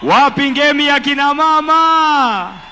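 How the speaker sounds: loud, energetic, rousing hype shout.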